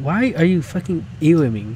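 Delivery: normal talking voice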